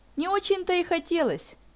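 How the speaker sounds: high, dismissive, scoffing snort. Zakhara answers Marishka's cold snub, with a scoffing snort. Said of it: "фыркнула в ответ Захара".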